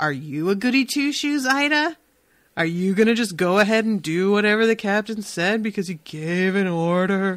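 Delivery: goading, testing, challenging taunting tone. Retelling how a character tests someone's obedience: imitating a testing, challenging tone. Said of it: "with this tone like".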